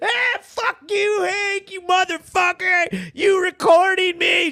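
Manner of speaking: play-acted high, drawn-out sobbing outburst. Retelling a woman yelling at the recorder: imitating Kylene crying and cursing. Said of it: "She's crying and shit".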